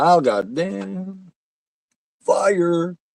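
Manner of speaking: mock very slow, high pained scream, "damn" stretched. Watching a movie with another speaker, imitating a character screaming about fire. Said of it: "he was screaming".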